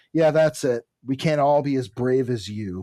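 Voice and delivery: ordinary talk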